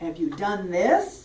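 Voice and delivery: stress held on THIS, rising end.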